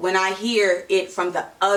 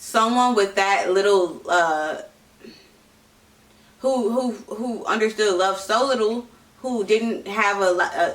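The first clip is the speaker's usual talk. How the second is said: stammering and tripping over words. Explaining an opinion about a relationship, stuttering. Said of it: "I'm stuttering".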